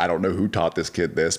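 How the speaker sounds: normal talking voice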